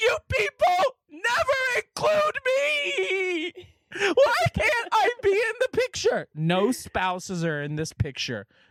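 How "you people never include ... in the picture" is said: very high, sobbing, crying wail. Retelling a woman left out of the family photo, imitating someone crying. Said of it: "starts crying and saying".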